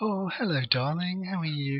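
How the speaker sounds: oily, slow sweet-talking voice.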